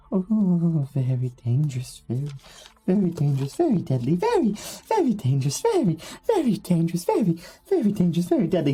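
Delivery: anxious character voice. Narrating a scene, answering the players in character: nervous NPC voice. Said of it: "He gets very nervous".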